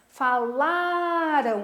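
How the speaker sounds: LA syllable of falaram stretched slow and high.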